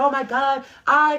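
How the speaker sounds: play-acted, very slow, very loud, high panicked scream. Retelling how a woman reacted after being hit: imitating someone screaming in panic. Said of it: "screaming, y'all, from the top of the lungs, panicking".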